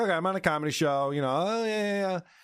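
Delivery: casual, easy, unbothered, playing-it-cool voice. Retelling how Heather tried to be cool with it: imitating Heather playing it cool. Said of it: "Heather was trying to be cool with it".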